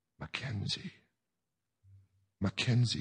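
soft, hushed, barely voiced whisper. A woman says the man's name as he begs at her feet, whispered. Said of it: "she whispered".

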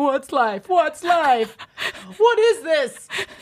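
tearful, overwhelmed sobbing, high and loud wail. Retelling calling family with no answer, crying on the studio floor, retelling own past crying. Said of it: "I'm crying, like, on the floor".

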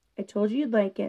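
ordinary delivery, nothing marked

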